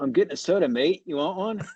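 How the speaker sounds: put-on deliberately lousy Australian accent. Quoting a man getting a soda in the desert, bad australian accent. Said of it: "I'll do an Australian accent really bad".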